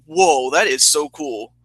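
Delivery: ordinary delivery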